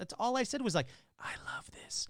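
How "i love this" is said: whispered, hushed, breathy, faintly creepy murmur. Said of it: "that was really creepy whispering".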